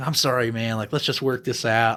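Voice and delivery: mock sudden remorseful, apologetic tone. Retelling how an arrested man swung between moods: imitating sudden apologetic pleading. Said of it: "he's doing the, the, the mood roller coaster".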